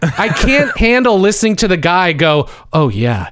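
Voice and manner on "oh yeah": mocking creepy flirtatious tone, lower pitch. Imitating the guy in the background: imitating a creepy flirtatious tone. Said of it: "creepy, sort of flirtatious way".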